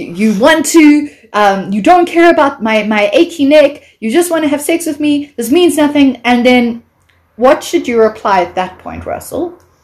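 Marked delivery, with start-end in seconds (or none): 0.0-6.2 play-acted upset, hurt, worked-up rant, pitched up, rising. Retelling accusing a stranger of wanting sex: retelling getting upset. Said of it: "I'm getting so upset".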